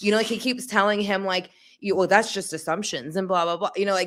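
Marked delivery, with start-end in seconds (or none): 2.0-3.2 upset, put-on voice. Retelling a tv scene where a father answers a detective: imitating an upset father. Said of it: "getting upset with the detective".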